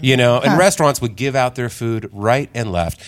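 ordinary delivery

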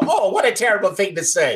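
put-on high-pitched voice of a little old lady. Recalling an old radio show, quoting a lady's reply in old lady voice. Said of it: "you'd hear this old lady go".

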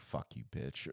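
mumbling under breath. Retelling cursing at people who ignored an offer of help, mumbling under breath. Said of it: "So I mumble under my breath".

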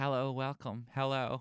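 overly earnest voice. Imitating the man who started the video: mock earnest activist voice. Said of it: "like Spike Jonze doing an impression of an activist".

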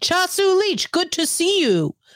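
stiff, stilted delivery, pitched very high. Recalling a movie line by Han Solo: stilted Han Solo voice. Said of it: "he had that real stilted, like, "I'm trying to get out of a mess" voice".

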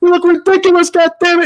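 mock angry, irritated tone. Retelling what a wrestler in a leprechaun costume said: imitating an angry complaint. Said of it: "they're so pissed".

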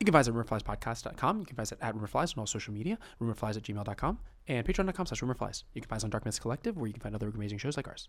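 rapid-fire read. Podcast host reads the show's plug fast when a co-host dares him: fast delivery. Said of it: "Do it fast".

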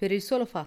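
plain reading voice

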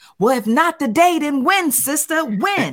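high, full-blast, top-of-the-lungs yelling. Retelling how a man in the mall followed her, imitating him yelling. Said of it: "started following me yelling".

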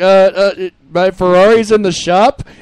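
very slow, dragged-out, painfully awkward delivery. Retelling a show scene, speaker quotes Morty to his crush: awkward Morty voice. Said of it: "in the most awkward voice possible".

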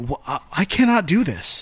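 ordinary delivery

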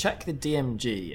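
normal talking voice

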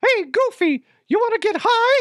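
squeaky voice, pitched way up high. Imagining the comic as a cartoon, the speaker plays Mickey addressing Goofy: Mickey Mouse voice. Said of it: "I am not good at Mickey Mouse".

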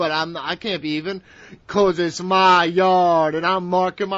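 loud, slow, boastful wrestler voice, every word stressed. Mocking a wrestler's attitude about his ring: imitating Roman Reigns. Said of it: "Roman Reigns is like".

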